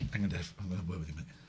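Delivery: fake threatening tone. Joking with the other speaker about an eleven PM finish: mock threatening. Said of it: "Are you doing this to be threatening".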